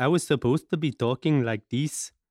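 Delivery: accent from Peru. Showing off accents to another speaker, doing a Peruvian accent. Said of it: "This is my Peruvian".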